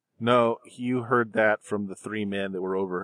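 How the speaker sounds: ordinary talk, nothing marked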